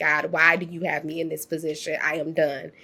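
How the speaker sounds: put-on tearful voice. Retelling crying in the car after an interview, re-enacting own crying. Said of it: "I was crying my eyes out".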